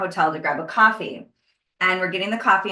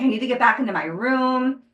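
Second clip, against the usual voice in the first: play-acted urgent, insistent yelling, stretching out "room"; 5 semitones higher than usual. Retelling searching a hotel for a lost earring, imitating own yelling. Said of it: "I'm like yelling at people".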